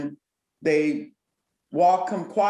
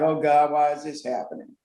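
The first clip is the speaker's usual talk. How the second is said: put-on, imitated mumble. Recounting George Floyd sitting in the car, imitating him mumbling. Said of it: "kind of mumbling like".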